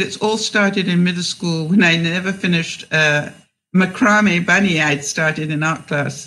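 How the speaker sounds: ordinary talk, nothing marked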